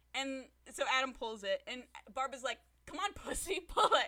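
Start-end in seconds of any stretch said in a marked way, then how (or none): 2.8-4.0 put-on loud, high-pitched, goading yell. Retelling a courtroom scene where a lawyer goads a defendant: imitating someone yelling. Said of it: "he basically yells at him".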